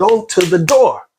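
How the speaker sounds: furious high shout. Recounting a phone call while the mother was sick, retelling an angry yell. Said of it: "I'm yelling. I'm I'm I'm really angry".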